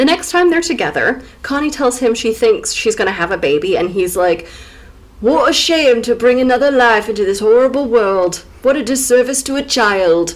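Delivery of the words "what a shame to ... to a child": put-on light Geordie accent. Retelling his reply when Connie says she thinks she's having a baby, a bit Geordie, like Ross Noble. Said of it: "It was a bit Geordie".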